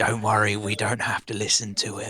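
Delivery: speaking in a whisper. Voicing a character who leans down to reassure a small companion: whispering. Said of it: "whispers into what could be considered their ear".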